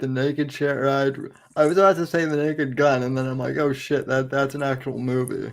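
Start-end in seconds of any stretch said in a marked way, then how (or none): none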